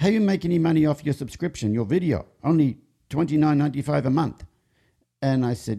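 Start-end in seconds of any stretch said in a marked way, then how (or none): 0.0-4.4 put-on Croatian accent, higher. Retelling what a show jumper from Croatia asked at lunch: Croatian accent. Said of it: "don't pick on my Croatian accent".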